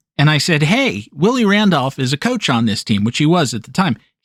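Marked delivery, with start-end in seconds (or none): none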